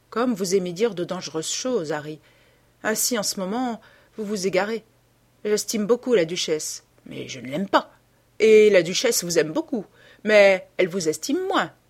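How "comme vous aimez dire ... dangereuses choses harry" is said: ordinary delivery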